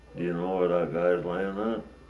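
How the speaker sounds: ordinary talk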